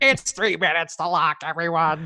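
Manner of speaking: awful, badly done, high-pitched announcer voice. Joking about a three-minutes-till-lock alarm: awful put-on announcer voice. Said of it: "that was an awful voice that I just did".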